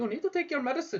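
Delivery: bad put-on Indian accent. Quoting an Indian doctor's advice about medicine, in a poor Indian accent. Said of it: "I just can't help but but do it in an Indian, a poor Indian accent".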